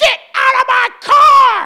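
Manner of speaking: put-on shrill, top-of-the-lungs, very loud old lady yell. Telling a story about an old woman confronting men in a car; imitating an old lady yelling. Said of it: "yells at the top of her geriatric lungs".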